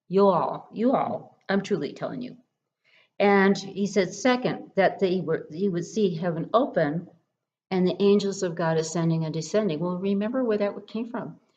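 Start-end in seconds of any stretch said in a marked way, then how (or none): 0.1-2.3 put-on spoken in an American southern accent. Explaining a Bible verse, the speaker jokingly voices Jesus with a southern accent. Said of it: "Jesus had the southern accent down first".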